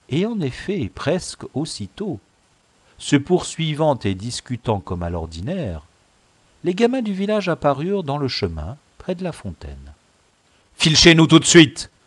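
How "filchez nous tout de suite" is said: dry, sharp, curt and very loud. Narrator voicing a father giving an order to his son, curt command. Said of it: "commanda sèchement à son fils".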